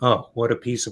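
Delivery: mock, put-on sarcastic tone. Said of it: "as in the non-sarcastic".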